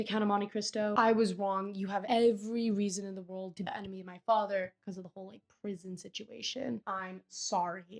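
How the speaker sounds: ordinary talk, nothing marked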